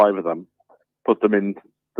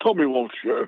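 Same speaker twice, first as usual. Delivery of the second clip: fake upper-class voice, raised pitch; 7 semitones higher, 6 dB quieter than usual. Interrupting the group as Tommy Walsh, in a Tommy Walsh impression. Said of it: "continue talking to you as Tommy Walsh".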